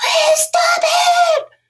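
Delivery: very high, shrill, loud screaming. Showing listeners what not to do when asking someone to stop: screaming. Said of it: "scream my head off at you".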